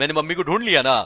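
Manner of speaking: ordinary delivery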